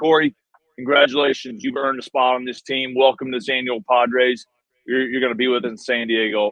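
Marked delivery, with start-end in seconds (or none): none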